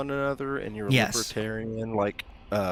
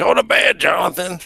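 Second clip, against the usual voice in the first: put-on drunk voice, higher, louder; 10 semitones higher, 14 dB louder than usual. Acting out the listener's dad for the group, imitating a drunk dad. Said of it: "you guys know what drunk people sound like?".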